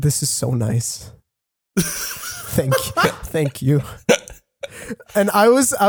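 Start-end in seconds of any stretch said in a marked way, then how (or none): 0.0-3.8 put-on drunk, grateful-sounding voice. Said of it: "He was so wasted".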